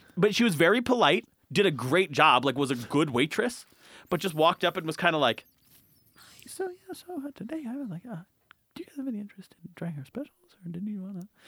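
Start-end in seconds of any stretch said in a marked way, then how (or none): 6.5-11.3 very quiet, high, shy, timid, halting voice. Retelling how a shy waitress offered the specials: imitating a shy, quiet waitress. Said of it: "shy and talking is not, like, their strong suit".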